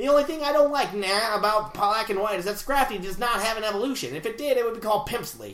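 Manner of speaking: put-on old-time twenties gangster voice. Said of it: "read this in a twenties interviewer voice".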